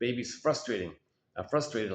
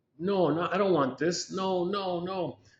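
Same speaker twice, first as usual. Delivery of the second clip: put-on high little baby voice; 7 semitones higher than usual. Describing a mother offering a honey-dipped nipple, imitating a baby refusing. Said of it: "And baby's".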